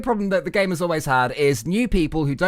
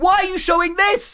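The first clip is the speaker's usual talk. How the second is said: loud screaming. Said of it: "And we were screaming".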